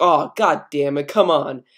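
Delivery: ordinary talk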